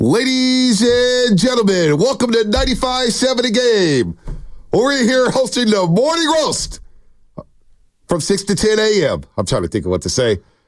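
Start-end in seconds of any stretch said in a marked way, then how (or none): 0.0-9.2 stadium public-address announcer voice, pitched way up. Asked on air to introduce the morning show hosts, in a PA announcer voice. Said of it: "Can you give me your PA voice?".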